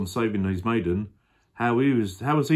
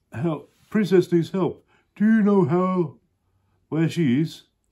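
high, put-on dinosaur character voice; 8 semitones higher, 4 dB louder than usual. Reading a picture book aloud, voicing a character, dinosaur voice. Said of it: "I'm going to do a dinosaur voice".

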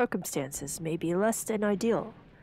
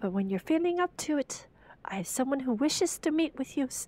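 soothing, consoling character voice, high; 5 semitones higher than usual. Playing a lighthouse keeper reassuring a storm survivor, consoling lighthouse keeper voice.

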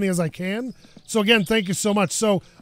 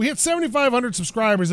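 plain

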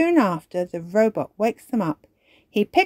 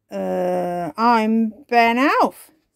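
nervous, uneasy voice. Reading a story aloud, Ben tells a robot his name, nervous. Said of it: "says Ben nervously".

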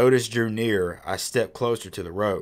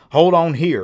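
gruff, very loud, growled voice; 8 semitones higher, 10 dB louder than usual. He tells the narrator where to hold on: growled. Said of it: "he growled".

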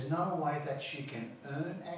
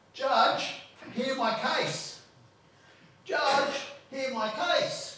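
slow, loud, high shout. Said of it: "just virtually yell out".

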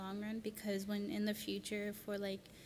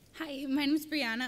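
voice breaks up, very loud and high; 5 semitones higher, 9 dB louder than usual. A student introduces herself to the group, her voice cracking. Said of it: "voice crack".

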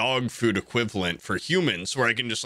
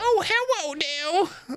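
put-on very high-pitched baby-talk voice. Imitating women at the airport: imitating women's baby talk. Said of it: "they just talk like that".

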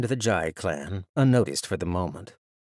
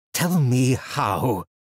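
pressing, insistent, demanding tone; 3 semitones higher, 3 dB louder than usual. A defeated fighter with scissors at his neck speaks to the victor, demanding. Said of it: "he demanded".

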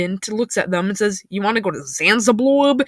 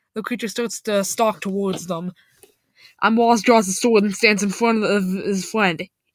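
plain reading voice

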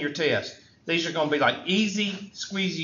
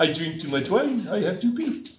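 put-on French accent in English. Quoting a movie character in a french restaurant: french accent. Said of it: "French accent".

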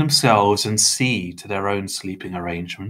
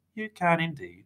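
gentle, soft, high cooing voice; 8 semitones higher, 9 dB quieter than usual. Narrator reads Mr. Tiny answering Mr. Crepsley, who refuses guards; cooing. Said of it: "Mr. Tiny cooed".

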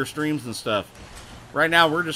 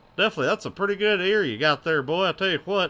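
mock Texan accent, words drawn out; 3 semitones higher than usual. A streamer, saying he sounds like Hank, answers in a Hank from King of the Hill voice. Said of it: "I sound like Hank from King of the Hill".

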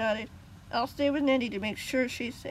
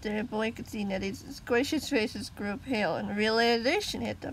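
ordinary delivery, nothing marked

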